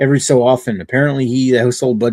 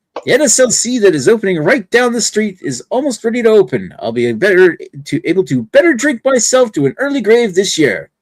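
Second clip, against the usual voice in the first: high, swooping cartoon professor character voice; 9 semitones higher than usual. Moving to the next item, a host reads it out in a Professor Farnsworth voice. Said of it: "Read it in like like Professor Farnsworth's voice".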